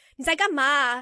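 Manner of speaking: mock loud, scolding, blurted outburst in Mandarin. Retelling what was blurted at a distracting father, imitating own scolding. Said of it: "I kind of blurted out in Chinese".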